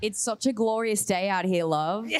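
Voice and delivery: thick, easygoing Australian accent throughout. Asked by an audience member to hear more of her Aussie accent: Australian accent. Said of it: "can we please hear more of your Aussie accent?".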